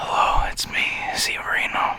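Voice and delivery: mock ASMR-style whisper. Doing a joke asmr intro after offering to: put-on asmr voice. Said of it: "I could do A S M R if you guys want".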